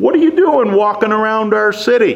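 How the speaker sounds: mocking shout.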